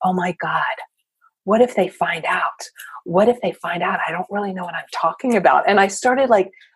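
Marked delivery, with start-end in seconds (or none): 0.0-5.7 put-on whispering. Retelling whispering into the microphone from the back of the room: retelling a whisper. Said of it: "I was whispering into the microphone".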